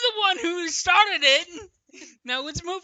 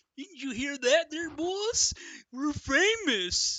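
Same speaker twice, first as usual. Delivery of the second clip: slow, drawn-out, dim-witted cartoon voice; 5 dB quieter than usual. Reading a cartoon story aloud, trying another take on Dopey's line: put-on Dopey the Fox voice. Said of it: "That was a pretty good impression".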